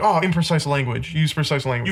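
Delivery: ordinary delivery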